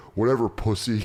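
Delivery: ordinary talk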